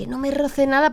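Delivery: high-pitched, pained yell, cried out.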